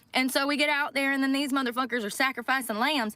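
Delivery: plain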